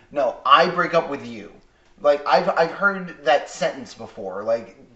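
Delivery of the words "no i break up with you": mock curt, clipped delivery, louder. Imitating a character ending a relationship: imitating a curt breakup. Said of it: "she's being curt".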